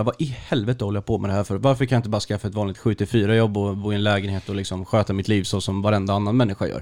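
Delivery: ordinary delivery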